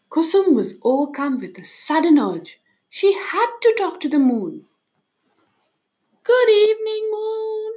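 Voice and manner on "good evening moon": timid, shy voice, pitched very high. Reading a fairy tale aloud, voicing a character who calls out shyly. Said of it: "she called out shyly".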